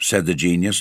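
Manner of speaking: plain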